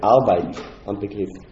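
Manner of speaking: firm, strong stress on Arbeit am Begriff.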